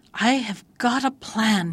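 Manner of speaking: slow, delighted, joyful cry. Narrator reads a tanuki telling his wife his idea, crying out joyfully. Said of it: "he cried joyfully to his wife".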